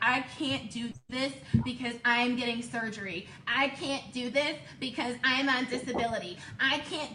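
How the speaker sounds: mocking, acted-out put-on voice. Imitating people's excuses for not joining: mocking imitation of people's excuses. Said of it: "why are you making your voice like that".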